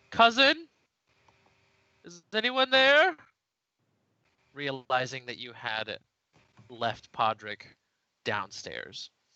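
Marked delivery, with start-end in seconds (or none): 0.2-3.2 high, loud, muffled calling out. Narrator voices someone calling up from downstairs: muffled Podrick voice from downstairs. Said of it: "a muffled voice coming from downstairs".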